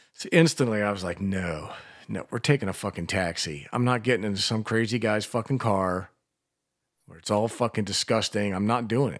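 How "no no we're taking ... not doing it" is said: usual speaking voice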